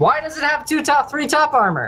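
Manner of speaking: put-on scream. Retelling losing both to enemies in a game, re-enacting a scream. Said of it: "I just screamed".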